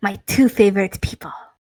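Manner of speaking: rough scruffy voice. Performing a character's line again after being asked for a gruff, rough, scruffy voice. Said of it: "Kinda slightly like that".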